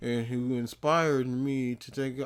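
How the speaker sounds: soft, flat monotone, one middle tone, no lift. Complaining that a man's talk makes you fade out, show how he sounds, imitating his middle tone. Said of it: "It's all just like this middle tone".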